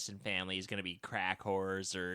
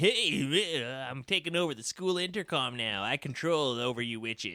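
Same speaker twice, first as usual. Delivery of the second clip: goofy put-on teen voice, higher; 4 semitones higher than usual. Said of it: "He gets a little goofy with it here".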